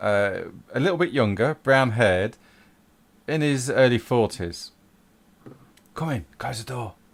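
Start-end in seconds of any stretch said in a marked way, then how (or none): 5.9-6.9 hurried, secretive, hushed half-whisper. A character ushering a visitor inside and telling them to close the door, half-whispering. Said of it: "Why are we whispering?".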